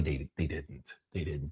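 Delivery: very soft, low insistence, dropped almost to nothing.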